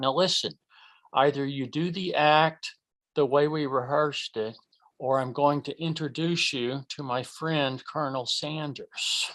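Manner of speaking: low, quiet, close, dropped voice. Retelling how he held the duck close on stage, retelling a lowered voice. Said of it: "I'd lower my voice".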